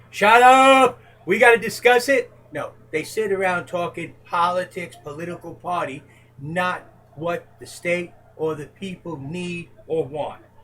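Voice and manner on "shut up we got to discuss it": high, loud yell. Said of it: "Stand up and yell to everyone".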